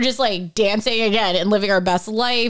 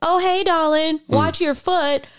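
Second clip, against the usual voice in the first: put-on, pitched-up, very Southern woman's accent; 6 semitones higher than usual. Retelling what a woman in a casino bathroom said: imitating a southern woman. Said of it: "very Southern woman's like".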